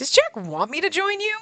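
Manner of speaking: sarcastic, pitched very high. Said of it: "I can say it sarcastically".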